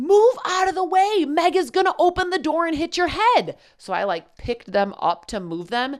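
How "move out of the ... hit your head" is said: mock very high, shrill, loud angry shouting. Retelling telling people to move away from the front door: retelling a loud mom-rage yell. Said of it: "in a mom rage, loud voice".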